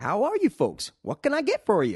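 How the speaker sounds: very high, very loud put-on American accent. Retelling a lady in an American cafe greeting customers, imitating an American accent. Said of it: "when you go to America and you're in a in a cafe".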